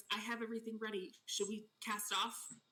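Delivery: hushed character whisper. In a shared story scene, Sheila whispers to the two players: Sheila whispering. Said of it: "Sheila whispers to you both".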